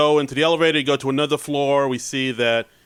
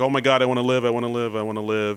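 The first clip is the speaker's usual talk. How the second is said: put-on panicked, frantic, freaking-out voice; 2 semitones lower than usual. Retelling a film scene where a character finds himself in a casket: imitating someone freaking out. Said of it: "he's freaking out".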